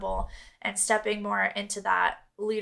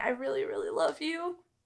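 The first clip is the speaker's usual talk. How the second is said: moved, heartfelt, emotional delivery, voice pitched up; 5 semitones higher, 3 dB quieter than usual. Thanking your viewers at the end of a video, getting emotional. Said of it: "I'm actually getting emotional".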